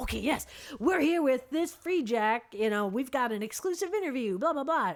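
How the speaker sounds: gushing, eager, excited presenter patter. Retelling how the interviewer talked to the free jack: imitating an excited interviewer. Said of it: "she gets all excited and is like".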